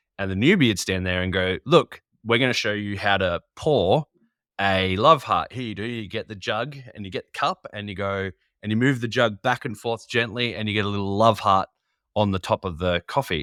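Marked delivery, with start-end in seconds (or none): none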